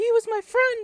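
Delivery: shrill, very high, very loud cry. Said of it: "the guy with the high point, pitched voice".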